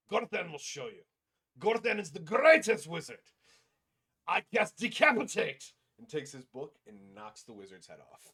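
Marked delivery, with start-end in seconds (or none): 0.1-5.7 very loud, very high-pitched, shrill, rising scream. Voicing a character attacking a distracted wizard: screaming in character as Gorthan. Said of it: "stares at him and screams".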